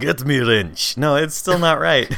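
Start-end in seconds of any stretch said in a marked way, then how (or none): 0.0-1.0 attempted Russian accent. Speaker tries a line in a different Russian accent. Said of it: "This is a different Russian accent".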